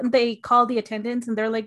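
ordinary delivery

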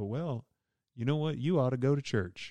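put-on Southern accent. Imitating what pastors often say, in a put-on Southern accent. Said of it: "I don't know why that accent just came out. ... It was disparaging against a Southern accent".

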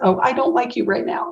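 put-on high, cross, angry voice of a four-year-old. Imitating a four-year-old grandson who is really mad: imitating an angry child. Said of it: "when my four-year-old grandson is really mad".

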